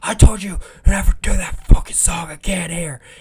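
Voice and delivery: very high, shrill, furious, enraged screaming. Retelling a cook at an open mic screaming at a comedian: imitating a cook screaming. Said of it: "coming out screaming at him".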